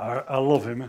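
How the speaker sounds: put-on speech through gritted teeth. Speaker acting out loving an enemy, said through gritted teeth. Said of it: "through gritted teeth".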